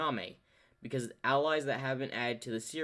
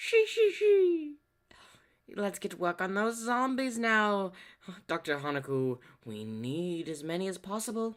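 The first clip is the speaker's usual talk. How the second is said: laugh first, then high, swooping put-on character voice; 7 semitones higher, 3 dB louder than usual. Showing a Gekko Moria voice with a laugh about zombies: Gekko Moria voice. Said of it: "I like to just try to do my Gekko Moria voice".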